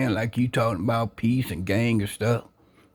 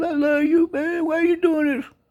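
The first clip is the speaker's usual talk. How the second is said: put-on very high, tearful, sobbing, pleading voice. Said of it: "You cried so hard".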